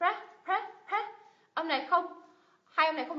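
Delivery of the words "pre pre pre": stressed, high pre of president. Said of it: "âm thứ nhất được nhấn này".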